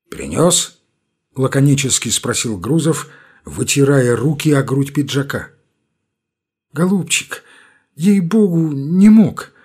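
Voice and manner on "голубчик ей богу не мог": slow, pitiful, pleading, plaintive mumble. Bulanin answers Gruzov, who asks if he brought it, plaintive mumble. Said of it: "жалобно забормотал Буланин".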